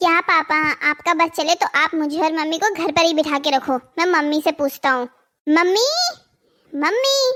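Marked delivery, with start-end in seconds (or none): 5.5-7.2 loud shouted call. After arguing with Papa, the speaker turns to call Mummy, shouting for Mummy. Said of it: "क्यों चिल्ला रहे हो?".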